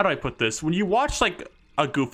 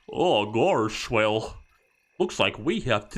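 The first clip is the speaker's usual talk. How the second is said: slow, stilted theme-park mascot cartoon voice; 2 semitones lower than usual. Imitating how Goofy sounds in Kingdom Hearts: Goofy theme park voice. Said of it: "the theme park voice on".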